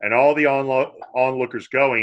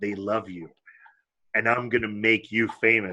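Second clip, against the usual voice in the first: hushed, soft half-whisper, close to the ear; 4 semitones lower, 6 dB quieter than usual. Retelling how a man half-whispered in a girl's ear: imitating a half-whisper. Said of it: "goes up to her ear and whispers".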